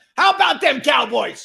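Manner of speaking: loud, very high, rough belted cheer. Doing a Dallas Cowboys coach's famous line: Jimmy Johnson impression. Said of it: "I'm working on my impressions".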